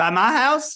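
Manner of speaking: loud, high-pitched country accent. Asked what they took someone for his birthday, the speaker answers in a country accent. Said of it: "you sounded so country right there".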